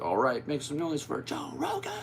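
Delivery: swooping, high hype-man announcer call. Imitating Tony introducing Joe Rogan on stage, in Tony announcer voice. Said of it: "I think that was the announcer voice. That's Tony. Like".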